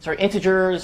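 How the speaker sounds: ordinary talk, nothing marked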